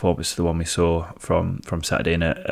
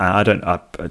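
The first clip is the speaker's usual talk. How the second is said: ordinary delivery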